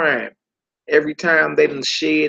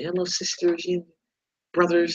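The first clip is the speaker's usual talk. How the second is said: gentle, hushed, very soft indoor voice; 2 semitones higher, 4 dB quieter than usual. Doing a greeting as Don Lemon, soft Don Lemon voice. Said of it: "This this real soft and inside voice".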